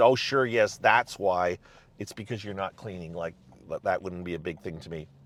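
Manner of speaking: heavy, snarky, sarcastic tone. Retelling a housemate's reply: imitating a sarcastic reply. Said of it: "sarcastically, she said".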